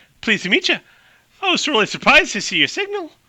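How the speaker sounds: put-on very high-pitched voice with Irish accent. Voicing Amy greeting someone who picked up her signal: Amy's accidentally Irish accent. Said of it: "Oh God, she sounds Irish".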